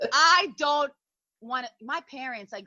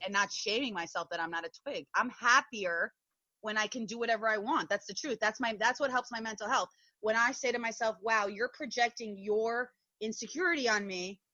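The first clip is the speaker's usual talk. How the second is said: ordinary talk, nothing marked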